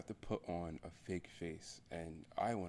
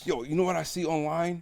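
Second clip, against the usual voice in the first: very loud, very high-pitched yelling; 11 semitones higher, 13 dB louder than usual. Talking about how acquaintances don't really care, yelling loudly. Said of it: "I'm sorry if I yell too loud".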